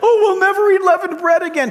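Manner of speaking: upset, whining voice.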